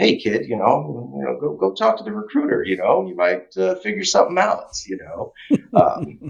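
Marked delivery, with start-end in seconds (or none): 0.0-4.7 put-on slight Jersey accent, pitched up. Quoting what the speaker's dad once told them as a kid, in a slight jersey accent. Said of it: "if you hear a bit of an accent, my dad's originally from Jersey".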